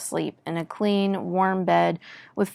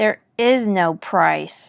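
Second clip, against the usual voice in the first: through gritted teeth, much slower; 4 dB louder than usual. Narrator refusing a young man's offer of coins, speaking through gritted teeth. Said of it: "I said through gritted teeth".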